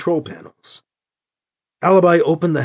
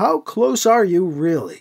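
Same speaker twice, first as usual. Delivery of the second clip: plain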